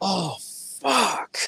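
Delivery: mock shrill, high, rough, ragged shout. Retelling how a fan in the crowd reacted: imitating a fan yelling. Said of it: "someone just yells out".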